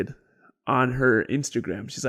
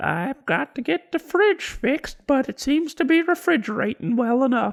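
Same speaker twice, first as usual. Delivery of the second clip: put-on very high, eerie, creepy old-lady voice; 12 semitones higher, 3 dB louder than usual. Describing a late grandma's small house, imitating her in a creepy grandma voice. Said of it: "is a creepy voice".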